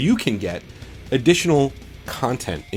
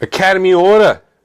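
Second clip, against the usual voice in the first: very loud, high-pitched New York accent; 8 semitones higher, 11 dB louder than usual. A podcast host answering the question 'What's your bacon?', in a put-on New York accent. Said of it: "I'm talking like a New Yorker".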